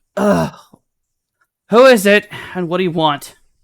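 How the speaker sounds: breathless panting. A character answering a visitor, asking who it is and what they want; panting voice. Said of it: "just like kind of panting sounding voice".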